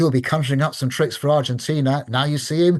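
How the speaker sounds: ordinary delivery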